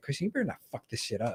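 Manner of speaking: put-on scolding voice. Retelling a former roommate warning him during a movie: imitating Tommy. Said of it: "It's like".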